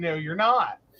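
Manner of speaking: ordinary talk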